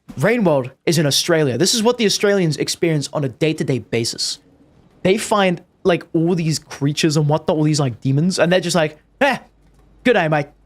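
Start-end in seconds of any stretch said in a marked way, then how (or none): 9.2-10.5 mock, put-on Australian accent. Joking about how Australians react to creatures, in a put-on Australian accent. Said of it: "Or whatever Australians say".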